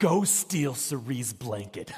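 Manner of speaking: mock whispering. A dad acts out his son's command, retelling a whisper. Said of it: "he's whispering".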